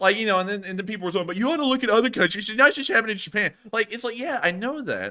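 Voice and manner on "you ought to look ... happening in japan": raised, scornful, mocking tone. Quoting rude commenters' objections back at them, in a mocking tone. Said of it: "saying that kind of like in a mocking tone".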